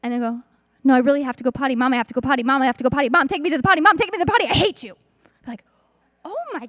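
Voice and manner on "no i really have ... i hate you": put-on loud child voice escalating from calm to frantic. A mother retells how her son escalates, imitating a child going frantic. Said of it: "zero to one hundred and completely make our head spin".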